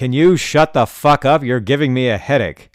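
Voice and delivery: furious, loud, shrill angry yelling. Retelling how an old player yelled at a loud opponent: imitating the old man yelling. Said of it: "until the old guy yelled".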